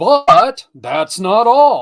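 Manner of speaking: booming announcer voice, very loud, very slow, drawn out. Pitching a digital magazine ad offer, big commercial announcer voice. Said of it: "I wanted to do the big commercial voice there for a second".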